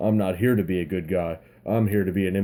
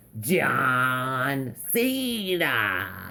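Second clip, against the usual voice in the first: put-on ring announcer voice, higher pitch; 5 semitones higher than usual. Asked by the other speaker to do the ring announcer: Justin Roberts impression. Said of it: "do your Justin Roberts".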